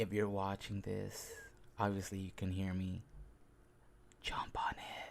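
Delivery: hushed whisper. Addressing anyone watching the video, whispering. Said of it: "it sounds much cooler when I whisper".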